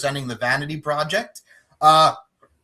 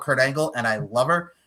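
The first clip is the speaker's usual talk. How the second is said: ordinary talk, nothing marked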